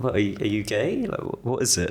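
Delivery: put-on mild, gentle, unaggressive, swooping tone. Retelling how a mother asked a question: imitating a gentle, non-aggressive question. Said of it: "not aggressively".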